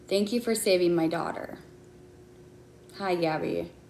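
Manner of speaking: emotional voice on the edge of crying. Reading aloud an email just received, on the verge of tears. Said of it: "I think I'm going to cry".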